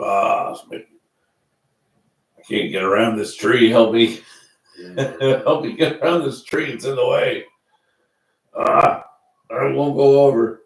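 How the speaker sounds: loud, put-on, dubbed elephant voice. Voicing an elephant on a muted nature documentary, in an elephant voice. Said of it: "in my elephant voice".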